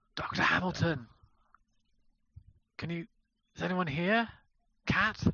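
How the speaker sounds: theatrical whisper. Searching an empty room and calling out for the others, stage whisper. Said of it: "I'm going to do the stage whisper again".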